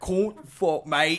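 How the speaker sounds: exaggerated Cockney accent. Showing how they ham up a british accent: hammed-up cockney british accent. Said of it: "Very co-, like, Cockney British".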